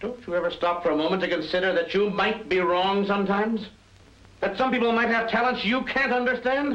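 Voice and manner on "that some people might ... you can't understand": angry shouting, pitched up. Drama scene, confronting another character who then remarks on it, shouting. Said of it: "You're shouting".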